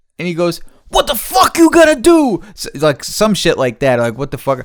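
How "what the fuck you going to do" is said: put-on very high, shrill, loud furious yelling. Retelling a man's retort in an argument over a green arrow: retelling an angry yell. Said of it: "he's like yelling".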